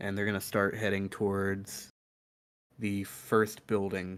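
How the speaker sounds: normal talking voice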